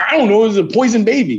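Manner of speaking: confused, flustered delivery.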